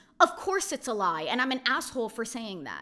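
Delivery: ordinary delivery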